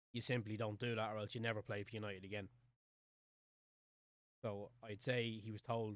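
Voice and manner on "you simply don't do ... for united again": ordinary talk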